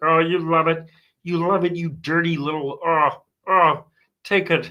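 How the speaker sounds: put-on frog puppet voice. Speaker imagining a Miss Piggy scene, speaking as Kermit: Kermit the Frog voice. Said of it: "He's like".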